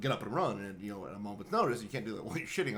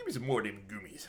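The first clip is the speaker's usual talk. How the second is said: put-on toothless man voice, chewing sounds while speaking. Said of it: "he was just kinda gumming 'em".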